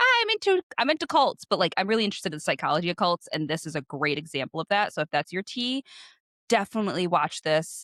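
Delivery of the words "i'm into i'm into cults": goofy, very high, silly put-on voice. Repeating how the speaker jokingly sums up their interest: silly put-on tone. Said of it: "I say it silly".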